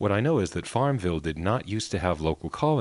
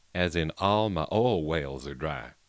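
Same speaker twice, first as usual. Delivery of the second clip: clumsy, badly faked Southern accent; 3 semitones lower than usual. Speaker mocking a How to Talk Southern recording, in a bad Southern accent. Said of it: "Sorry for the bad accent".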